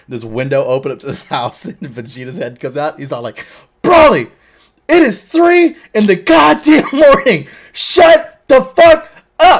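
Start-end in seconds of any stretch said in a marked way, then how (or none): 3.8-9.6 shrill, very loud, high, drawn-out holler. Retelling a scene where Vegeta leans out a window at Broly, imitating Vegeta yelling. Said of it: "you yell at me for fucking yelling".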